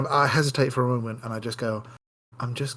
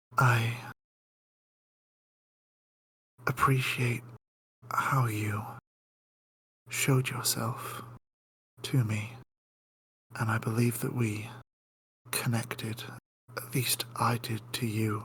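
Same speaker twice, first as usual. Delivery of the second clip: hushed, soft, private whisper; 4 dB quieter than usual. Acting a character who leans down to speak private words to another, whispering. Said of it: "so I'm just going to whisper this one".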